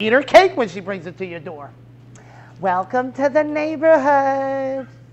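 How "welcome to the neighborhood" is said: flamboyant, campy, theatrical delivery. Joking about a witch neighbor who brings cake, put-on camp voice. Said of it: "There he goes with his... with his".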